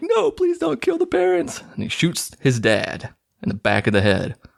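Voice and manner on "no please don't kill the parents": mock very high, tearful crying voice. Retelling a film scene where a boy begs, imitating someone crying. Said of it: "And he's crying like".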